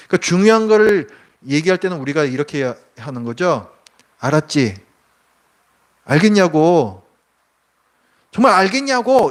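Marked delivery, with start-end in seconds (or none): 4.1-9.3 loud voice, swelling and building steadily louder. Showing how the voice grows louder when saying something important: louder, raised voice. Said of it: "이렇게 목소리 점점 커지죠".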